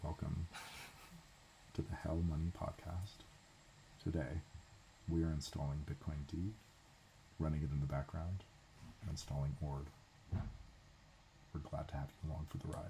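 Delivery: very quiet, low, deep podcast-host voice. Podcast host opening the Hell Money Podcast episode, low deep voice. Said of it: "Should we should we do like the low deep voices?".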